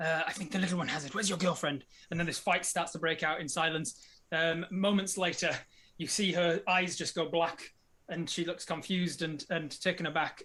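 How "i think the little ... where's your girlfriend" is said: urgent, fast whispered shout. A game master voices a woman twisting a player's arm back, in a shout whisper. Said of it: "shout whispers".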